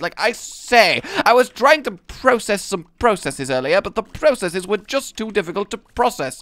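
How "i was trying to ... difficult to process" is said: high, affected, put-on upper-class posh accent. Showing how the word process suits a posh accent; posh accent. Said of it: "process is one of the best words to get into a kind of more posh accent".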